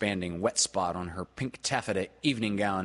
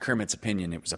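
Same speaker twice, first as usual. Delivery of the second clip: usual speaking voice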